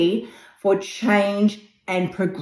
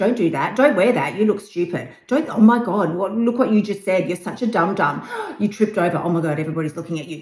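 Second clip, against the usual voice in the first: belittling, negative, nagging voice that never lets up; 3 semitones lower, 5 dB quieter than usual. Showing the critical inner voice that nags about looks and mistakes: voicing a nagging negative inner voice. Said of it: "that negative bullshit voice that is all up in your grill".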